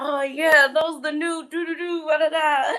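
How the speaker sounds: thrilled, bubbling voice. Recalling a father buying the kids new shoes, the speaker imitates excited dad. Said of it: "he would get so excited".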